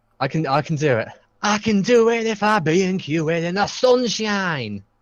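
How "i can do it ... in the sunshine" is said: slow, drawn-out, high-pitched celebrity voice. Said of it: "Doing my [name] impression".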